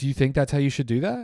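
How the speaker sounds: acted, high, calm, passive-aggressive needling. Imitating a mother questioning a waiter: imitating a calm needling question. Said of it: "really questions where it, like, fucks with your head".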